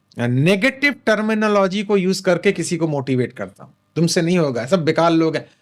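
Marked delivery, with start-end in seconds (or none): none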